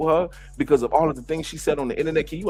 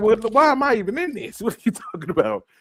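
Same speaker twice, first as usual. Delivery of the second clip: high pitch swooping all around; 7 semitones higher than usual. Imagining how Portia would react to being dragged in: imitating Portia Williams. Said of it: "I know Portia like".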